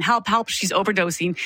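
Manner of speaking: usual speaking voice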